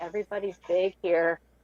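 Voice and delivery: very quiet, hushed murmur under the breath. Retelling what he said to the speaker at the Cracker Barrel: retelling a very quiet remark. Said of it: "very quietly says to me".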